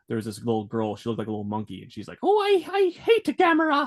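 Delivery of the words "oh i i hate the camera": put-on very high, very slow, silly British accent. Recalling a dubbed show, the speaker imitates a little girl in a dumb british accent. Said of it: "really British, you know, dumb British accent".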